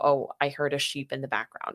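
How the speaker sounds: ordinary talk, nothing marked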